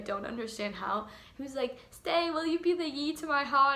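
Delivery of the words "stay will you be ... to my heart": imitated, mocking high-pitched voice. Retelling what a man said while being cute, imitating his high voice. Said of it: "in his like high voice that he does".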